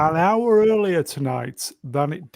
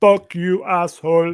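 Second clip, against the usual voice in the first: put-on Austrian accent, louder; 3 semitones higher, 4 dB louder than usual. Quoting a film line to the others: Terminator accent. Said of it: "you got the accent perfect just then".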